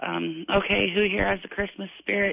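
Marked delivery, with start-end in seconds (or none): none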